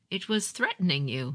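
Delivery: plain reading voice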